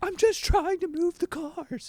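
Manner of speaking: mock pleading, very high-pitched, begging tone. Telling a story, the speaker imitates Frank pleading against being taken to jail. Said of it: "Frank is just like pleading to them".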